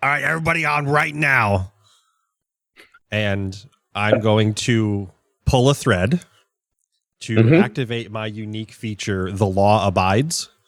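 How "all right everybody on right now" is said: rushed, commanding, rallying call-out. In a game scene, a character swings a rifle onto a lever, yelling. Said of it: "just yells".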